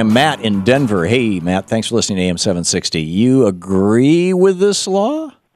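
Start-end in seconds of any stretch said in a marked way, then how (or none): 3.0-5.3 very slow, drawn-out, skeptical tone. Asking a caller whether he agrees with the law: skeptical tone. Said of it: "skepticism in your voice".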